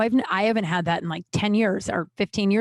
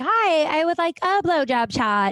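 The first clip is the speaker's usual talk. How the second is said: high, mocking, annoying girly voice, made fun of; 7 semitones higher than usual. Retelling a girl ordering from the manager at a nightclub, mocking a girl customer's voice. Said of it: "I'm going to use that voice because this girl sucked".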